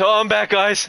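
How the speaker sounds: winded, puffing, breathless, very high-pitched voice. Retelling how a friend comes back to his unmuted mic, imitating being out of breath. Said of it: "Comes back all fucking sweaty and out of breath".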